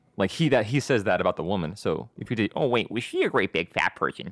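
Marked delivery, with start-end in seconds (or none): 2.6-4.3 cartoonish character voice. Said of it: "the same voice".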